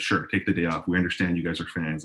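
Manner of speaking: ordinary talk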